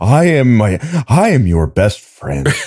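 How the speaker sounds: cartoon talking-dog character voice. Imitating a dog that talks, after Dug from Up is named: Dug from Up voice. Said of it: "Every dog is just Doug from Up".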